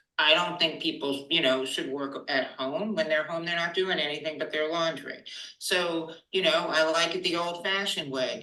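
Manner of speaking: ordinary talk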